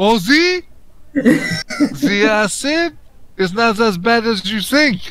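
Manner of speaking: slow, unhurried put-on French accent. Giving another character an inspiring boost after being asked: french accent. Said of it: "In your French accent".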